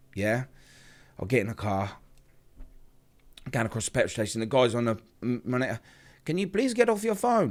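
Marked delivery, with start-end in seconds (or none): 6.3-7.6 put-on Indian accent, very high-pitched. Retelling what the petrol station attendant on the monitor said; imitating an Indian accent. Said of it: "good accent".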